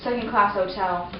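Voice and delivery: ordinary talk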